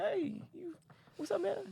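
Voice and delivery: very high, squeaky rooster voice. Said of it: "Maybe he was like".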